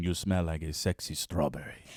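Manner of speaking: put-on deep Chilean accent, very low and soft. Retelling what a man said to a woman, in a deep Chilean accent. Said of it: "in his deep Chilean".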